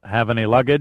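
plain

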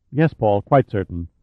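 ordinary delivery

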